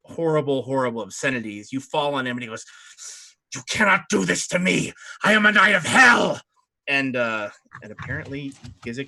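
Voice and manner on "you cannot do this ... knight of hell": roaring, loud, high bellowing monster voice. Game narrator voices a knight of hell as players fall on him, bellowing. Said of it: "he starts bellowing".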